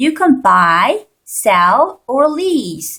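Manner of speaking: list tune: rising on buy and sell, falling on lease. Explaining list intonation in English, rising on buy and sell, falling on lease. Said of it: "올라가고 올라가고 마지막 것은 내려가는 게 돼요 ... 이렇게 억양이 떨어집니다".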